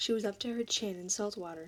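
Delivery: plain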